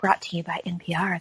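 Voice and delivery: soft public radio announcer. Bantering with others about Wednesday night watch parties: NPR voice. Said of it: "when I do my NPR voice".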